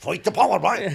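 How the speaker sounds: loud, high-pitched call. Retelling what a guard at a checkpoint shouted: imitating a guard in cork. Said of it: "A guard said that to me".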